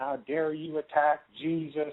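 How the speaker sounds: mock, toned-down, mild screaming yell. Retelling how an old lady reacted to a hat: imitating someone screaming. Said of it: "she starts screaming at me".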